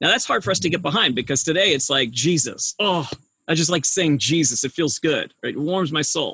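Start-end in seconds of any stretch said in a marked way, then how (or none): none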